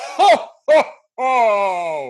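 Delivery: very high, loud ho laugh, each ho drawn out. Asking everyone for their best Santa impression, the host goes first: Santa Claus impression. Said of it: "give your best Santa impression".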